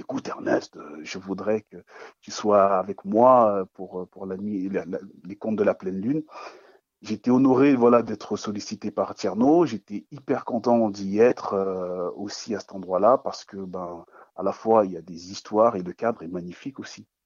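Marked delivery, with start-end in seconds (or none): none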